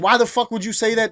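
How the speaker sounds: put-on angry, mad outburst. Retelling her reply to a worrying question: imitating someone getting mad. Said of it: "She gets real mad at me".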